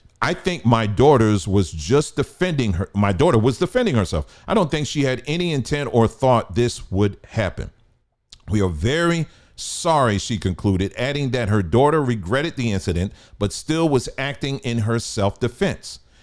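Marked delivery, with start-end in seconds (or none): none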